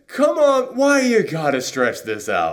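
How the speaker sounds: high, slow, cocky villain attitude.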